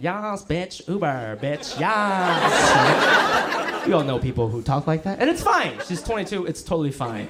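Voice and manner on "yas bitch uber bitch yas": put-on drunk college party-girl voice with slang. Describing a friend's little sister when she drinks, imitating drunk sorority girl. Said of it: "she starts talking like".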